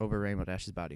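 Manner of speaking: plain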